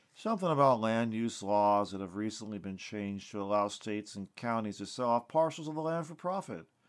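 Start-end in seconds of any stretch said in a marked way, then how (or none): none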